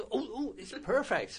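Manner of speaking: put-on Scottish accent. Retelling what Alison said at an awards ceremony, imitating Alison's Scottish accent. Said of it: "like she does in a Scottish accent".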